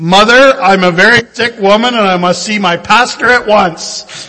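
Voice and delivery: loud, full-bluster blustering shout. Telling a story of a little girl calling down the stairs, retelling a child's shout. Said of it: "the little girl shouted down the stairs".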